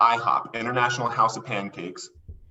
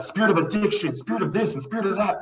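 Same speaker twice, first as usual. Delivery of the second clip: play-acted, heated, high-pitched yelling; 9 semitones higher than usual. Retelling how an elder prayed over the speaker: imitating an elder yelling. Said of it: "yelling at him, like".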